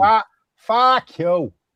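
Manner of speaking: put-on Boston accent. Another speaker insists it be said in a boston accent; he obliges, boston accent. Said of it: "You gotta say it in a Boston accent".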